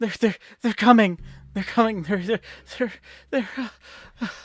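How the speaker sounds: out of breath, panting, loud, rushed, stumbling. Voicing a man who comes running to warn the village: out of breath. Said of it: "out of breath".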